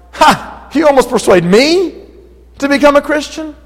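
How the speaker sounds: high, sneering, mocking scoff. Asking whether a man said this in mockery: imitating a mocking tone. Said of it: "or was it in a mocking tone".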